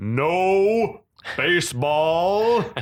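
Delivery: booming shout with the "no" stretched out. Recapping a scene where one character booms out a command: retelling a booming shout. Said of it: "we got Kuzo booming out".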